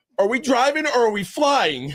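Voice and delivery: put-on fearful voice. Retelling the big boss's question from the back row: imitating someone's fearful voice. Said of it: "there was some fear in his voice".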